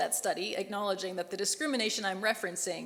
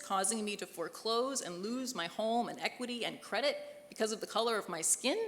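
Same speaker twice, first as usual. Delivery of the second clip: ordinary talk, nothing marked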